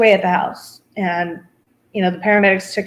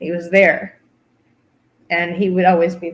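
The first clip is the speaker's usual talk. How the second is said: choked-up voice, cracking and breaking with emotion; 2 semitones lower than usual. Speaker remembering how hard he fought to get home to them, choked up. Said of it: "I can't talk".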